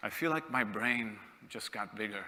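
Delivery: put-on dry, understated, deadpan British delivery, no fuss. Retelling what the senior leader said after the talk: imitating a deadpan british delivery. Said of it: "in a very deadpan British way".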